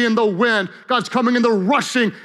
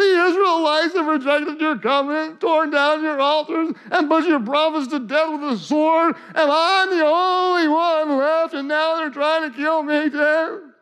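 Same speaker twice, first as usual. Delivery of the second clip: mock whiny voice, slower; 6 semitones higher than usual. Retelling what a complaining figure says, in a mock whiny voice. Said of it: "he's got whiny voice. He says".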